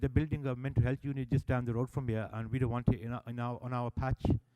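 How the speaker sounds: ordinary talk, nothing marked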